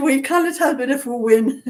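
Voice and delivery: high, loud voice while laughing.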